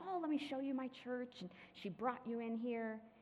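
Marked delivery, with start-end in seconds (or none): 0.1-1.3 put-on sweet little old lady voice, pitched up. Picturing a visitor walking into the church, the woman there offers to show it: sweet little old lady voice. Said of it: "this sweet little old lady standing there".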